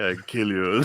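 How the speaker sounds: put-on grumbling voice. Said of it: "he's just doing his grumble".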